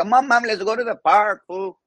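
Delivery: put-on very high voice with full-on Mexican accent. A comedian acts out their childhood self talking to Mom, in a Mexican accent. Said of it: "I had a Mexican accent for the first three years".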